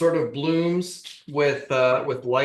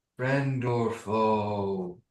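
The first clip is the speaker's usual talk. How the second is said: sneering mocking echo, foe drawn out; 4 semitones lower, 6 dB quieter than usual. Voicing a shadow that mocks a player's question: mocking echo of the player's voice. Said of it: "almost in a mockery of your own voice".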